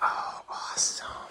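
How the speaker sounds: soft, unvoiced whisper under the breath.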